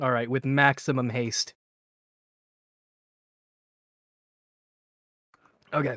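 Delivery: speaking mid-bite, eating while talking. Acting as dm for the game while eating: talking while eating. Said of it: "Sorry, I'm eating".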